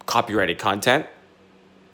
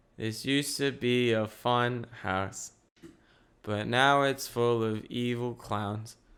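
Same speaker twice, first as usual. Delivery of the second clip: slow, level, monotone drone. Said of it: "in a monotone voice just saying".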